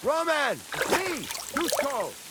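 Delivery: high, far-carrying, loud yell.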